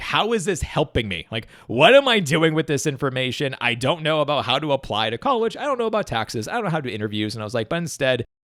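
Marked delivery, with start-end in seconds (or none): none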